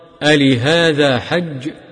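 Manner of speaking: plain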